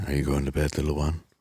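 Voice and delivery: sultry, buttery voice. Speaker acts out what he says to people who go to sleep to him, sultry, buttery voice. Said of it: "Sultry, buttery voice".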